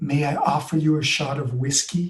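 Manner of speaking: tender, careful, very gentle, kindly tone. Recounting a lady who tapped him on the shoulder, imitating her speaking very gently. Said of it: "she says very gently".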